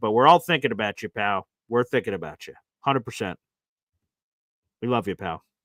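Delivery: deep, teary, choked-up voice with low tenderness. Host speaks on air to a listener going through a hard time, getting teary. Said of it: "I'm getting kind of teary thinking about it".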